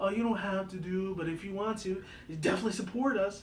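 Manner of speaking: high, falsely sorrowful, fake sad tone. Mocking how charity sites ask people for money: mock fake-sad tone. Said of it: "they say it in a very like a fake like sad tone".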